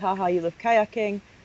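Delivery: ordinary delivery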